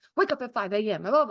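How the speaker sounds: commanding, army-style military drill-sergeant voice. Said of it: "in, like, a military voice".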